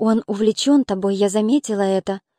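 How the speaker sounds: ordinary delivery, nothing marked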